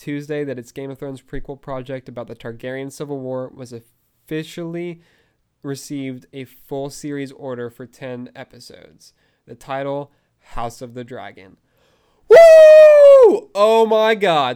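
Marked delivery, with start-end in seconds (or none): 12.3-14.6 very high, very loud, shrill, booming excited whoop. A host reacting to a series order announcement, excited yell. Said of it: "Sorry for the yell".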